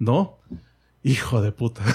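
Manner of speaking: heavy, strong, thick fake French accent. Retelling an anecdote, the speaker quotes someone in a heavy French accent. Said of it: "así en acento francés, vea bien, eh, heavy".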